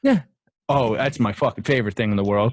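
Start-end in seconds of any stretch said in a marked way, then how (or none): 0.0-0.2 very high-pitched voice. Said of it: "I call it girlfriend voice".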